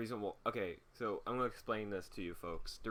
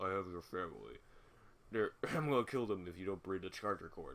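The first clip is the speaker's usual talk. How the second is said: muffled, disguised voice-changer voice, lower pitched; 2 semitones lower than usual. Retelling a phone call from a disguised caller, muffled voice-changer voice. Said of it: "it's like a muffled voice, like you know, like that voice changer thing".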